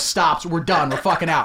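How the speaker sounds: usual speaking voice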